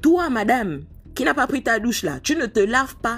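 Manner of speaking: put-on high, stern, scolding grandmother voice.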